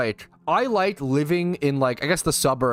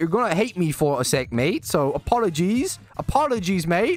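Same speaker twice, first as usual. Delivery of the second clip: put-on British accent, pitched up; 5 semitones higher than usual. After a viewer's redemption, the streamer talks to chat in a British accent. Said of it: "redeemed me to talk in a British accent for one minute".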